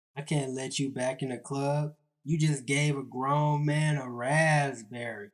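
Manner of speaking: ordinary talk, nothing marked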